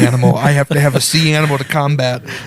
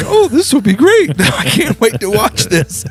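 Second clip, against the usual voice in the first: play-acted naive, innocent, eager, excited sing-song; 7 semitones higher than usual. Retelling sitting in class as a movie started: imitating innocent eagerness. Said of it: "I sat there innocently like".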